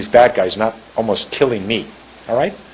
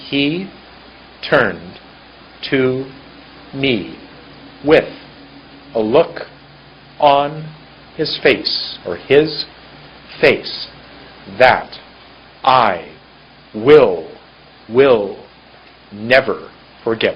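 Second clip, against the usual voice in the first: choppy, halting, one word at a time. Teaching phrasing, demonstrating the sentence read one word at a time. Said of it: "one word at a time".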